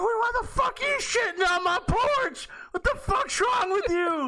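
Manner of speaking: very high, alarmed, freaked-out outcry. Retelling what a lady said when she freaked out: imitating someone freaking out. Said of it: "and she freaked out".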